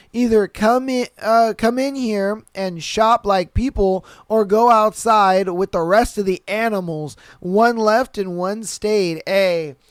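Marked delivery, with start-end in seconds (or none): none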